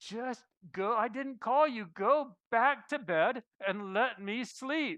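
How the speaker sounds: slow, slightly exasperated, mildly frustrated brush-off. Retelling a tired man sent back to bed: a bit of frustration. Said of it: "with a bit of frustration in his voice".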